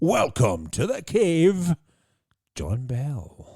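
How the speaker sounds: loud swooping presenter voice. You welcome John Bell to the cave in your best Jeremy Clarkson Grand Tour voice. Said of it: "In my best Jeremy Clarkson style, Grand Tour style voice".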